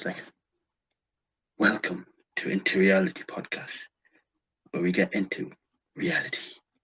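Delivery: deep, low, hushed announcer-style intro voice. Pitching a new podcast intro to the other speaker, the speaker tries it in a deep voice. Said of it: "it'll be like this in a deep voice".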